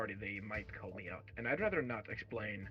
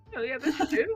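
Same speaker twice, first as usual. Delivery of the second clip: higher-pitched put-on disguise voice; 8 dB louder than usual. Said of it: "force myself to do a higher pitched voice".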